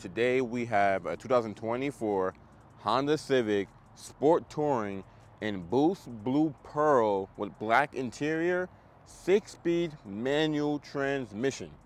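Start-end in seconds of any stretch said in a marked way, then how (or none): 9.1-11.7 slow, with each word drawn out on its own. Naming the car's transmission for viewers, said slowly. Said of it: "I have to say that slow".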